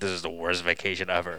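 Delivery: mock muttering under breath. A father retells how he reacted whenever his kids spoke on vacation, retelling muttering under breath. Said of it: "I'd be like mummering under my breath".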